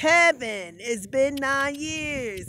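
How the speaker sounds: voice slipping into a put-on Italian man's accent. Recounting running into Kevin before entering Walgreens, Italian man accent. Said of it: "my voice automatically turned into an Italian man".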